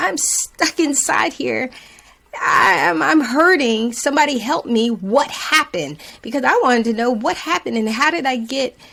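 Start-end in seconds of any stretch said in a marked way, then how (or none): 0.0-6.0 play-acted, high-pitched screaming. Retelling a moment in front of a trauma doctor: imitating own past screaming. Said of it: "And I was screaming".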